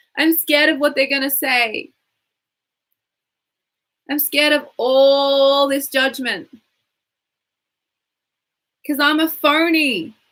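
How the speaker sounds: full-on whiny, complaining voice, all drawn out. Leading a tapping exercise with lines for listeners to repeat, whiny and loud. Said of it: "Get really whiny and loud if you can".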